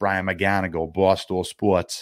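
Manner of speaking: put-on heavy, hard Boston accent. Retelling how a man introduced himself at a Bruins playoff interview, Brian McGonigal's hard Boston accent. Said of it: "with a real hard Boston accent".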